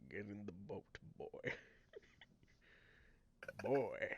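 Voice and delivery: hushed, breathy character voice. Asked to say a line in that voice, Kratos voice. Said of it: "in that voice? / Oh my god, it's Kratos".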